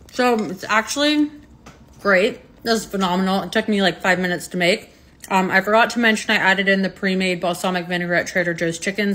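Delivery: speaking between bites, mouth full. Tasting a homemade wrap and giving a first impression, talking while chewing. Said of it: "sorry for chewing with my mouth open".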